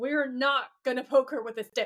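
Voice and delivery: put-on, totally disgusted, outraged tone. Retelling a character's reply to a plan to poke someone: imitating outraged disgust. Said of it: "He is outraged".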